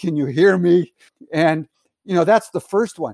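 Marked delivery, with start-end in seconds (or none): 0.0-0.9 acted-out yell, slower. Unsure whether the mic works on a video call, retelling a yell. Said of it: "I'm yelling".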